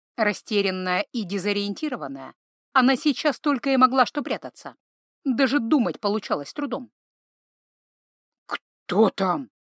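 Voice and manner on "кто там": hoarse voice, much lower pitch. Stepfather asking who is at the door, hoarse. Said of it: "хрипло спросил Павоне".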